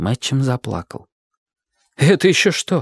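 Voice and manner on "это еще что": high, surprised exclaiming outcry. A man reacting as his companion bursts into tears, exclaiming. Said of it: "воскликнул Дик".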